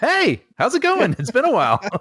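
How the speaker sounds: excited, enthusiastic voice. A co-host redoing his hello after being introduced, excited greeting. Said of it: "when you evince excitement, that sounds fake".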